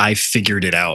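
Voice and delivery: mock proud, boastful tone. Teasing another speaker by imitating him: imitating someone saying it proudly. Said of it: "you just proudly say".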